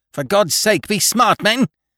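very high-pitched, roaring, bellowing voice. The captain roars at his men in the boat: roaring. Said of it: "roared the captain".

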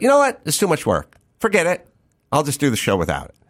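put-on sarcastic, swooping sing-song. Telling how they answered a woman who refused to help, retelling a sarcastic remark. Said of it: "And I sarcastically said to her".

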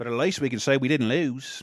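bad, fake, put-on Australian accent. Mocking a team that boycotted, the speaker voices them in a bad australian accent. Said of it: "Bad Australian accent".

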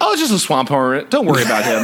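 ordinary delivery

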